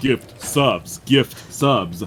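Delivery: slow, deliberate, drawn-out delivery. Streamer thanks a viewer for gift subs, drifting into almost Christopher Walken voice. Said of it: "you just about went Christopher Walken".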